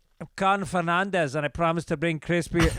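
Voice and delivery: clumsy, failed attempt at a Spanish accent. Pretending to be Cardinal Fernandez making a promise, in a bad Spanish accent. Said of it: "I can't do a Spanish accent".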